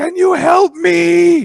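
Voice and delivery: very high, very slow, raw, hoarse acted scream. Retelling a man stuck downstairs calling for help: imitating someone screaming.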